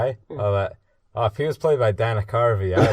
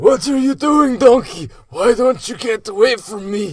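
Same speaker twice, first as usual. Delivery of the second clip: very high, shrill, loud, deliberately bad cartoon voice; 13 semitones higher, 7 dB louder than usual. Asked to do funny voices for the kids, a bad Shrek impression. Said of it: "Is that a bad impression of Shrek".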